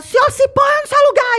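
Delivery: very high, shrill, scolding shout. Acting out what the speaker would yell back at a shouting man: acting out a shout. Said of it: "se eu fosse ver enfermeira gritar".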